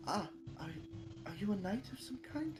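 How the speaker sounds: meek, timid, quiet, soft voice. Voicing a buff Harengon woman asking a question: meek, quiet voice. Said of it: "very meekly and quietly says".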